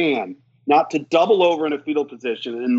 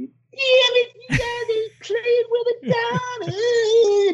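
high, squeaky scream, "down" stretched out. Retelling how an old offensive coach yelled at the defense: high-pitched screaming Coach Kidd voice. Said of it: "he's got this high-pitched voice".

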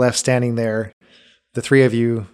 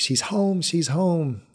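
raised, high-pitched calling out; 6 semitones higher, 5 dB quieter than usual. A narrator voices people inside picking up the cry as she arrives, raised voices crying out. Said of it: "you hear raised voices that pick up the cry".

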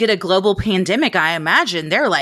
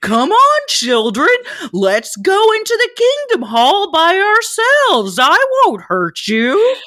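very high, swooping, affected cartoon-character voice; 11 semitones higher, 3 dB louder than usual. Imitate a man coaxing children, in a put-on cartoon character voice so no one is scared. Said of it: "affectation with his voice to sound like a cartoon character".

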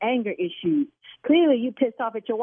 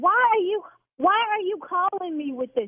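yelling, much higher; 9 semitones higher than usual. Arguing on the phone with a caller about his wife's eyelashes, yelling. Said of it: "now I'm yelling".

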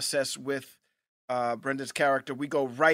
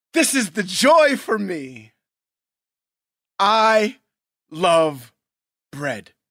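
very loud, gushing talk-show host voice; 3 semitones higher, 9 dB louder than usual. Show a friend how she starts off your favorite Weight Watchers commercial, in an Oprah impression. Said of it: "she starts off like this".

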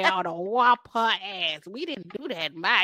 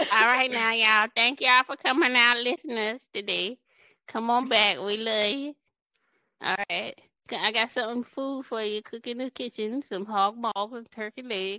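put-on old lady voice; 3 semitones higher than usual. Podcast hosts doing the show's outro for listeners: old lady voice.

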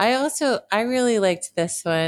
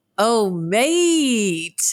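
clumsy fake Australian accent, drawn-out "mate"; 4 semitones higher than usual. Closing out the episode, the speaker attempts a bad Australian accent. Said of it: "I cannot do the Australian accent".

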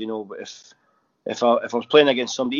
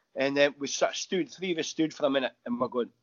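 ordinary talk, nothing marked

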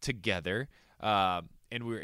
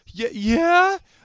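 play-acted shocked, shrill, very high and loud; 11 dB louder than usual. Retelling his proposal, the speaker imitates her answer in complete shock. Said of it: "Like just complete shock".

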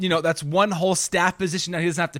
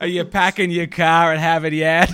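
loud put-on New York Boston accent; 5 dB louder than usual. Another speaker asks for your new york boston accent, and you oblige. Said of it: "your New York Boston accent".

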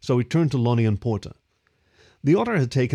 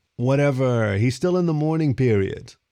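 usual speaking voice

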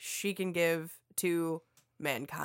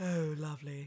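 low, soft, sultry, seductive tone; 6 dB quieter than usual. Responding after being told to go down in register, low register. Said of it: "Go down in the little register".

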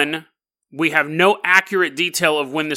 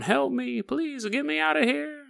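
very high, rasping, creaky ghostly pleading voice; 10 semitones higher, 8 dB quieter than usual. Imitating a ghost heard late at night: imitating a ghost begging. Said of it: "the ghost of a old slave sitting on the ground going".

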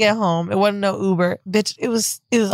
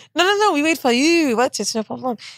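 high-pitched, reassuring, put-on French accent; 6 semitones higher than usual. Retelling what the tour guides said, imitating a French accent. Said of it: "Do the accent again".

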